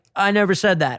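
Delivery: normal talking voice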